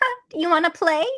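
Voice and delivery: put-on tiny, high, little-girly doll voice. Discussing a doll character's voice with friends, showing it as a little doll voice. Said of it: "like an actual little doll voice".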